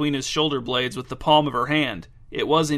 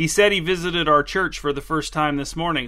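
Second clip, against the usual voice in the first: usual speaking voice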